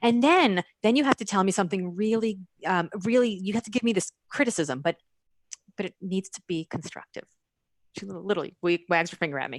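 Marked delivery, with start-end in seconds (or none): none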